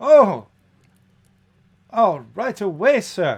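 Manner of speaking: very loud, thin, metallic, tinny, high voice. Narrating a scene, voicing a reply to the call for food: tinny voice. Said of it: "you hear a somewhat tinny voice".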